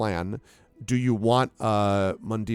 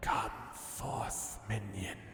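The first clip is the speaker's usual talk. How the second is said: serpent voice, quieter; 14 dB quieter than usual. Voicing a serpent that summons a player: serpent voice. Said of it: "the serpent looks at you and then says".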